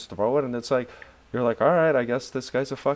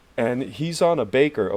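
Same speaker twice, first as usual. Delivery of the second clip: plain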